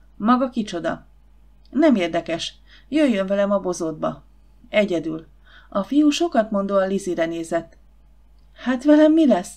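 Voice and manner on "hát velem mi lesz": high, quavering, trembling voice. As a boy calls her companion away alone, a girl asks him: trembling. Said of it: "Kérdezte Lizzie reszketve".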